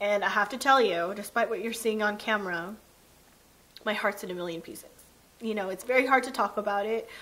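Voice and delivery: fast, teary voice, on the verge of tears. Speaker telling the camera about something very hard to talk about, teary. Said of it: "I was hoping I wouldn't get teary, but I am".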